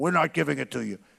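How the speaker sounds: put-on very tough tone. Acting out what he would tell the other side: saying it very tough. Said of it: "but I'd say it very tough".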